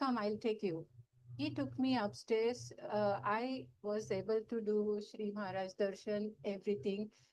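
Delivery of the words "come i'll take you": ordinary talk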